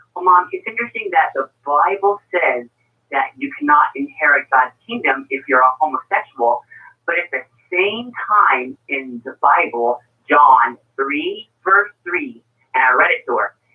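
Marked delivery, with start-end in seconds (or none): none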